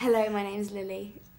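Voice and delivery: put-on British accent.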